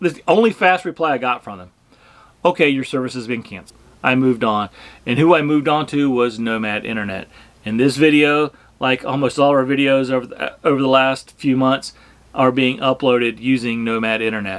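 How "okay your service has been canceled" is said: very fast delivery, much faster. Speaker quotes the service provider's reply to a cancellation request, really fast. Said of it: "really fast".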